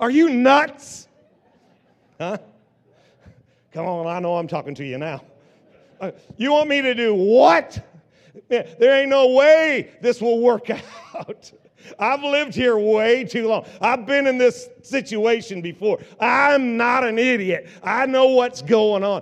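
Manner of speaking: very loud, high, doubting, incredulous rebuke. Voicing the doubting voice in your head when God asks something, mock-incredulous attitude. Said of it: "you need to get the tude that he had".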